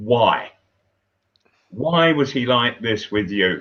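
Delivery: ordinary talk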